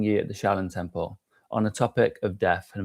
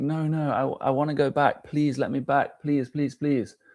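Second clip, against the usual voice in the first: acted, frantic, desperate pleading tone; 4 semitones higher than usual. Telling a hypothetical story of facing god at death, acting out begging and pleading. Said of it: "you're begging and pleading".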